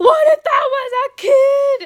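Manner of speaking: shrill, booming, very loud, high, drawn-out yell. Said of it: "a good five minutes of yelling at him".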